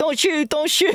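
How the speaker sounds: put-on squeaky child voice. Imagining a kid in the game pleading: imitating a squeaky kid voice. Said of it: "a squeaky voice just being like".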